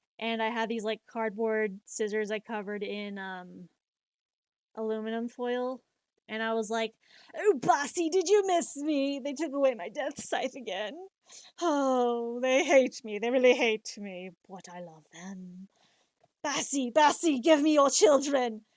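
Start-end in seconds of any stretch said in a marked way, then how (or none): 7.4-18.5 loud character voice with drawn-out oh. Recalling a cosplay, speaking in character: Grell voice.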